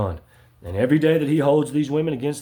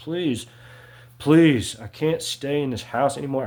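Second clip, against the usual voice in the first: acted crying, pleading voice, slower. Recounting begging their mother to let them leave, acting out own past begging. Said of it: "I was begging, I was crying, I was pleading".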